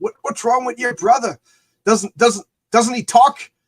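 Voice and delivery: very loud, high, heavy, thick Irish brogue. Retelling the grandfather asking the father about his silent brother, thick Irish brogue. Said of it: "such a thick Irish brogue".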